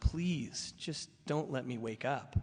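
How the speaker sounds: slow, mock earnest begging tone. Retelling a past nightly prayer to god: retelling own begging prayer. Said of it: "I'm begging God".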